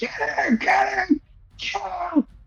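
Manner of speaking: shrill, high-pitched screaming voice. Narrating a game turn, voicing Yek backing toward the wall: Yek screaming. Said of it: "he's just screaming".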